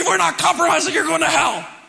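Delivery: harsh, nasty, cutting, loud and rough tone. Imitating parents speaking to their kids: imitating a harsh, nasty tone. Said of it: "You don't say it that way to your kids".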